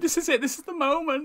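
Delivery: put-on, very high, overly emotional voice. Retelling a reality show moment: imitating someone getting emotional. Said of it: "proper getting emotional".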